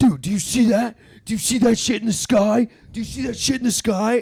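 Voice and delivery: acted, frantic, very loud, high-pitched shrieking. Retelling a friend in the car suddenly pointing at the sky: imitating someone freaking out. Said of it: "he just starts freaking out".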